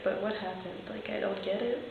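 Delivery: soft, confused, puzzled murmur.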